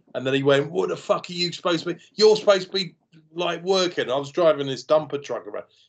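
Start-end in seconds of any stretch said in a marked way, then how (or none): 0.8-4.1 pitched-up, angry, scolding shout. Retelling how a man on a building site shouted at him: imitating a man shouting. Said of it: "he shouted at me".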